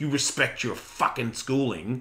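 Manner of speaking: put-on firm, stern fatherly tone in Australian accent. Retelling how you tell off your son Tiger: imitating Australian dad scolding. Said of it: "that's how Australian dad talks to Tiger".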